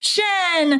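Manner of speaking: high-pitched screamed call.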